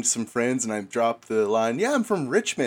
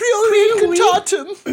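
very high, very loud British schoolboy accent; 10 dB louder than usual. Speaker showing how they pronounce a spell name, British schoolboy accent. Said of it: "I say it in a British schoolboy accent".

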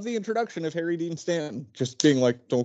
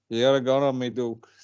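flat, droll put-on drawl, lower; 3 semitones lower than usual. Imitating an actor's line from a film, as droll as possible. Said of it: "as droll as possible".

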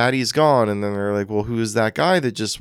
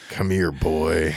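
creepy, spooky demon voice, lower pitch; 5 semitones lower than usual. Joking about a father waving kids over from the shadows, in a creepy demon voice. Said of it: "not with that voice".

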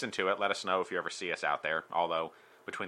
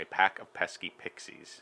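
plain, careful, deliberate pronunciation. Asked to repeat the tongue twister quickly: saying it fast. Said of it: "but can you say it fast?".

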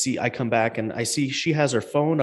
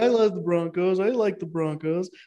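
put-on drunk voice, higher pitch; 8 semitones higher than usual. Retelling a run-in with a drunk man, imitating him drunk. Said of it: "he's just drunk at this point".

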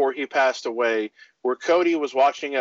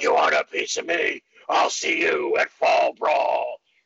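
slow, rough-edged voiceover voice; 2 semitones lower than usual.

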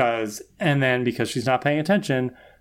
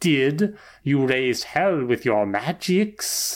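silly, goofy demon voice, slower. Recapping a TV episode, speaker quotes the demon in a silly demon voice. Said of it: "who has like the silliest voice ever".

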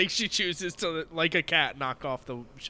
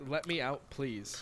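soft flat monotone, no inflection, much quieter; 9 dB quieter than usual. Describing a scene, the speaker voices the egg character: soft, flat monotone. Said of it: "she talks very soft and not with a lot of inflection".

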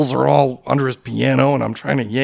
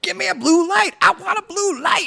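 shrill, furious screaming outburst. Retelling what a man yelled at the crew on headsets, retelling a scream. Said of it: "So he starts screaming".

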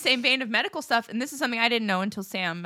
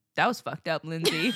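put-on deadpan, much lower; 5 semitones lower than usual. A speaker retells a comedian's reply to her, retelling a deadpan remark.

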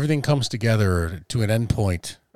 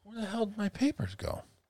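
put-on little immigrant boy voice; 12 semitones higher, 10 dB quieter than usual. Asking where the papers went, sounding like a little immigrant boy. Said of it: "you sounded like a little immigrant boy that didn't have his visa".

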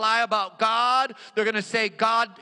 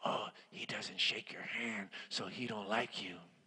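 very quiet, slow, hushed whisper; 13 semitones lower, 17 dB quieter than usual. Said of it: "They're gonna whisper".

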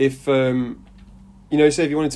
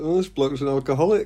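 plain

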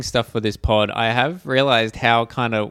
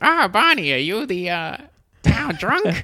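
high, accurate cartoon voice; 8 semitones higher than usual. Retelling a scene where Marge asks Barney a question: Marge Simpson impression. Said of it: "A perfect Marge impression".

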